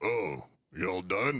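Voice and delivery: big booming voice. Retelling Mike McConnell greeting a departing reporter: Mike McConnell's big booming voice. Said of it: "big booming voice".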